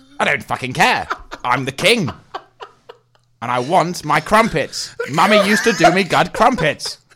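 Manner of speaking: very loud, shrill, shrieking, furious enraged bellowing. Playing the king in a scene with an aide, do an angry King Charles impression. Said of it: "I was actually quite angry for a second".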